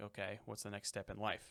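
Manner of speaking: ordinary delivery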